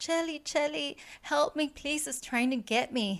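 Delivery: high, tearful, frightened crying voice. Retelling a ghost story, quoting the sister's plea: imitating a sister crying in terror. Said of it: "she was crying and terrified".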